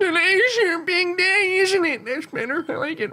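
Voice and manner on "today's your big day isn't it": put-on slow old man voice, pitched up a little. Playing an old character after being told to go higher, higher old man voice. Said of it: "But a little bit higher".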